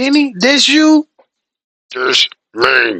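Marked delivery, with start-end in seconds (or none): 1.9-3.0 low, loud, mechanical robot voice. A caller answering the host on the line, in a robot voice. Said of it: "Vinny sounding like uh, a robot".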